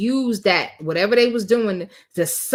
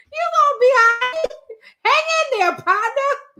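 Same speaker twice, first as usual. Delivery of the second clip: voice jumps suddenly up, very high. Mocking how Dion's voice went up talking to a man needing bond money. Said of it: "You see how high his voice went?".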